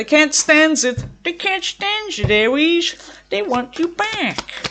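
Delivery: high, swooping, bouncy, sing-song cartoon voice. Giving a reading to Aries: sounding like a Bugs Bunny character. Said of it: "Why did I sound like a Bugs Bunny character?".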